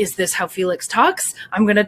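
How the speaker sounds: gruff, rough put-on voice. Imitating an actor trying out a voice: imitating Felix's gruff voice. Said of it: "the gruff voice".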